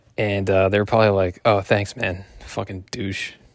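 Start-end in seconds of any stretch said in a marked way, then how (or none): 2.5-3.3 put-on mutter under the breath, much quieter. Imagining people insulting him as they walk away, imitating an under-breath mutter. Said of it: "Under their breath as soon as they walked away".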